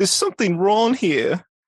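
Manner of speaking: very high-pitched and loud. Asked for a good impression, the speaker answers with a Courage the Cowardly Dog impression. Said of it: "Can do Courage the Cowardly Dog".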